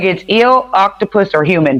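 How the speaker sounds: ordinary talk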